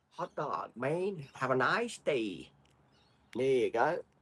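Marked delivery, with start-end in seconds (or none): 0.2-2.5 slow, best-attempt put-on American accent. Asked to do their best American accent, the speaker tries it: American accent. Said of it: "Do our best American accent".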